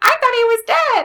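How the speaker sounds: comic, very high, squeaky helium voice. Retelling an actor's line from an episode, in a funny helium voice. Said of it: "funny helium voice".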